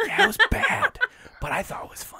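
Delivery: ASMR-style soft whisper.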